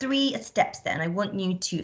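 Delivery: ordinary delivery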